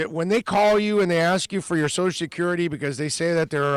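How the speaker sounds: ordinary talk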